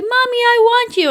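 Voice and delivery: put-on very high, loud, pleading two-year-old voice. Retelling how a mother refused to hold her child, imitating a two-year-old. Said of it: "she was like two".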